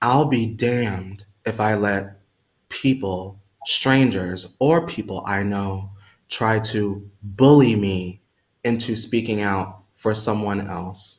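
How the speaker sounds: soft-spoken, very low voice. Addressing the audience, wanting them to let it sink in: soft voice. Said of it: "hear my soft voice".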